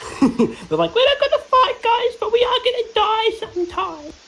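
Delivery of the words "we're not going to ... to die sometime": very high-pitched voice. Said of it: "What was that voice?".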